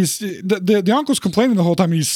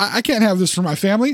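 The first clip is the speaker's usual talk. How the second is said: plain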